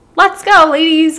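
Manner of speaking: excited, high, loud cheer.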